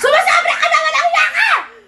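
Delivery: high-pitched angry yell, laughing. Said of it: "Angry tayo".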